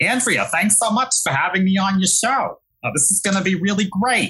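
put-on Brooklyn accent, very high and mean. A guest shows off an accent while thanking host Andrea: mean Brooklyn accent. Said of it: "I have a mean Brooklyn accent that I can do for you".

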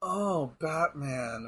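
very soft, sultry sexy voice. Showing how Poison Ivy should be portrayed: sexy Poison Ivy voice. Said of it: "I'm gonna do a sexy voice".

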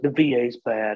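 put-on dopey, dumb ex-military veteran voice. Talking about veteran groups, mimicking what everyone says, in a dumb veteran voice. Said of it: "that's my dumb veteran voice".

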